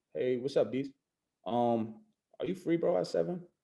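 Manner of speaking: flat, unexcited, with zero enthusiasm. Showing the opposite of the advice while calling diesel, unexcited. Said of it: "I'm calling Diesel like this, opposite of what I'm telling you to do".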